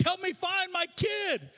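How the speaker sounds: desperate, high, slow, frantic begging. Retelling a mother asking a guard for help: imitating a frantic plea. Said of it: "She was freaking out".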